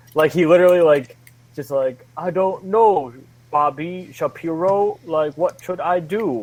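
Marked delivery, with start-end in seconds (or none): 2.1-6.4 slow, drawn-out, dopey way of talking. Mocking how an actor plays O.J. Simpson in a show: imitating Cuba Gooding Jr. as O.J. Simpson. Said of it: "that's how he talks the entire show".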